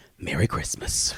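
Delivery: soft, quiet mutter under the breath. Retelling how the mom quietly said it after an argument: imitating mom saying it quietly. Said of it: "I hear her quietly say".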